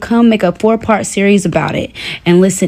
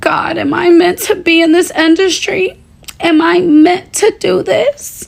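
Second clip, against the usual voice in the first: very high, tearless fake weeping; 9 semitones higher than usual. Retelling a woman's video of herself crying in her car, doing mock crying. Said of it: "How I just did my little fake cry".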